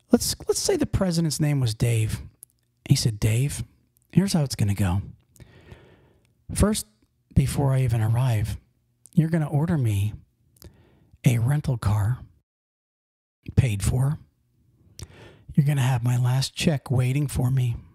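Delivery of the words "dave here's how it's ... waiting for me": imitated very calm, unangry speech, lower. Retelling the guy's words to the company president: imitating a very calm manner. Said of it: "He said it in a very calm manner".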